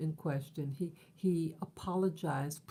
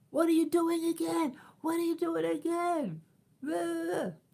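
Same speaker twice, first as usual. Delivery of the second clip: play-acted very high, loud, repeated furious screaming; 12 semitones higher, 5 dB louder than usual. Retelling the super's outburst in the lobby: imitating someone screaming. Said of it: "He started screaming at me".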